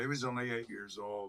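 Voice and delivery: ordinary talk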